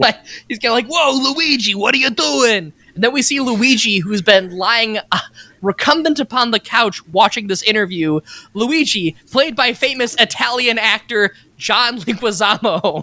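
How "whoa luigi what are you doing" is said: brash New York tough-guy voice, full-on. Describing Bob Hoskins as Mario in the movie, doing a Bob Hoskins impression. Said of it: "the archetypical, hey, I'm walking here guy".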